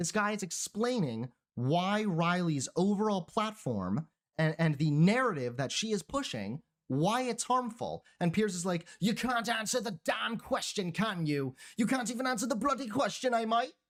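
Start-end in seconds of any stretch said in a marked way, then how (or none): 9.0-13.7 put-on Australian-sounding accent, raised pitch. Retelling Piers interrupting a guest's explanation, Piers impression, Australian-sounding. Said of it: "I know that was an Australian accent".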